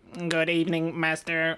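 artificial, robotic servant-like voice. Joking about what a bought robot would say: voicing a sex robot. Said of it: "if I bought you one and it said".

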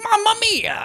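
very high, squeezed cartoon voice. Retelling what Mario says when hit by a shell: Mario voice. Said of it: "when he got hit by the shell and he's like".

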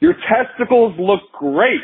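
very high, loud called-out voice. Speaker retells talking to a hard-of-hearing man without hearing aids: retelling screaming at him. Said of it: "I'm just kind of like screaming at him".

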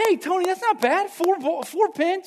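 very high, booming, loud, drawn-out cheering. Speaker retelling the group cheering on tony's bowl, retelling loud cheering. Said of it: "real loud, real loud".

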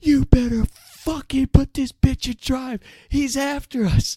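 piercing, shrill, high-pitched, furious scream at full blast. Retelling a chase, imitating a quiet friend screaming at the driver. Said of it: "gets right in his face and just screams".

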